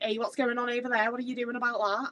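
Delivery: put-on strong, full-on Liverpool Scouse accent. Recalling your younger self a few hours into Liverpool: full-on Scouse accent. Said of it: "I would have a full on Scouse accent".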